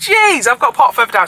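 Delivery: high, fed-up, annoyed shouting. Driver unable to park near the building, shouting. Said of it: "Sorry about shouting".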